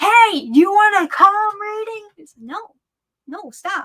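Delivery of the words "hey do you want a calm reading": loud, high-pitched yelled vendor call. Speaker recalls people calling out to her as she walked around; retelling people yelling at her. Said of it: "they would like be yelling at me like".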